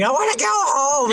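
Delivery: put-on high-pitched, whiny screaming like a child.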